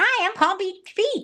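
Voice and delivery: very high, little, weird helium-like fake voice. Imitating the man being discussed: Paul Beach Pete's little fake weird voice. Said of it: "like a little fake weird voice".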